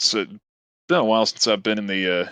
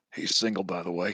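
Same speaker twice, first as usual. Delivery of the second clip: hushed, very quiet half-whisper; 3 semitones lower, 9 dB quieter than usual. As the character shakes her hand, they half-whisper to her: half-whispering. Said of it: "I just kind of whisper".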